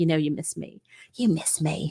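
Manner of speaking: low, soft, hushed, sultry seductive phone-sex voice. Describing two people's chemistry, mimicking how one talks to the other: Abby's phone-sex voice. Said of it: "she literally talks like she's having phone sex".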